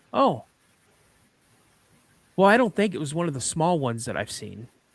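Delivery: mock dry, dead calm, straight-faced matter-of-fact delivery. Retelling a brother's reply after a dad's smack: imitating a calm, straight-faced tone. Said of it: "straight-faced and as calm i-, in a tone as he could say".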